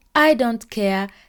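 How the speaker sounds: normal talking voice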